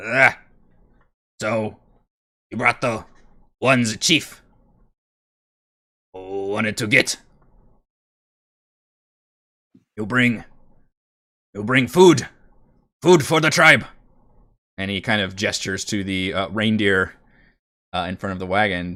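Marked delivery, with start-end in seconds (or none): 0.0-13.9 loud goblin voice, shouting. Voicing a cruel-looking goblin shouting down from the ramparts: goblin shouting down. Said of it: "shouts back".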